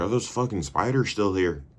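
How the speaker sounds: put-on Irish accent. Retelling a story, voicing Zach as he gets out of the bathroom: Zach's Irish accent. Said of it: "Is that good Irish?".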